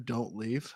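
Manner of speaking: hushed whisper. Imagining someone speaking over to a person in a stall: whispering. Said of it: "somebody's whispering over to you".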